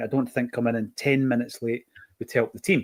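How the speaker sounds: plain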